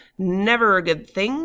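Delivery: through clenched teeth. Reading a story aloud, voicing a character's reply, through gritted teeth. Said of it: "he says through gritted teeth".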